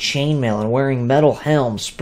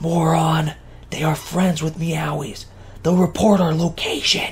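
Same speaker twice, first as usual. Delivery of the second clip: harsh whisper with a flash of anger; 3 semitones higher, 4 dB quieter than usual. Tu grabs Viet by the shoulder and whispers harshly to him. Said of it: "whispered harshly".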